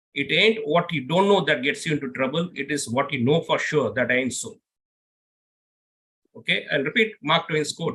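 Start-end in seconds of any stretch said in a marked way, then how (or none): none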